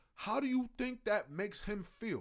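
ordinary talk, nothing marked

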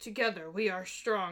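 put-on deep voice with Russian accent. Quoting a favourite video game character's line: Zarya voice. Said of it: "She got that deep, like, Russian voice".

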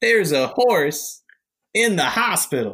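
weak comedian voice, very slow. Trying out a Halloween costume voice: bad John Mulaney impression. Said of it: "That wasn't great".

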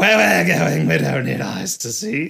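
rough, creaky, rasping voice. Quoting a favorite movie line: Sam Neill impression turning into Batman. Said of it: "my Sam Neill impression turning into Batman".

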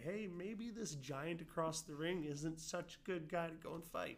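small, high, slow, timid voice. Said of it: "that small little voice somewhere inside of you".

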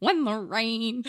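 showy, high, loud theatrical stage voice. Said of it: "you had that theatery voice".

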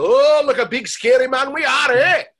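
shrill, booming, very high silly cartoon Scottish accent. Demonstrating a cartoon role as the Loch Ness Monster: comedy Scottish accent. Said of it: "That's a comedy accent".

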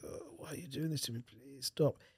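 mock drunk-sounding, woozy, groggy, drugged-up voice. Retelling begging the staff to stop while drugged after surgery: imitating groggy drugged voice. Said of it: "probably sound like a drunk or something".

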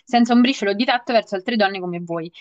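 usual speaking voice

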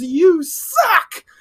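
high-pitched scream at the top of the lungs. Recapping a match where a wrestler screams at his opponents: imitating a scream.

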